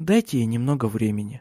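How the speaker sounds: soft, gentle, soft-spoken. Celia speaks to Charlotte after another woman leaves the room: said softly. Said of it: "мягко сказала Силия".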